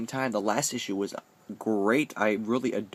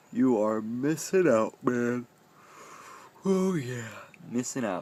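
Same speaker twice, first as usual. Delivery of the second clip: talking through a yawn. Tired video host recommending a story to viewers, yawning. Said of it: "I apologize for yawning".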